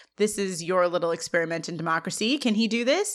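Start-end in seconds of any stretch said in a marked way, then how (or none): none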